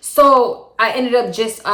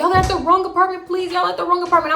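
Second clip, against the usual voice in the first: very high, acted crying with a begging tone; 10 semitones higher than usual. Retelling pleading with a caller that police are at the wrong apartment: imitating own past crying. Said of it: "I'm crying at this point".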